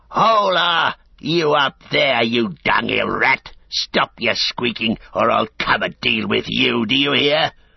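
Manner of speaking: snarling brute orc voice, "Hola" drawn out. Narrating a story, an orc shouts up at someone above, in a snarling orc voice. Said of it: "a snarling orc voice rang out".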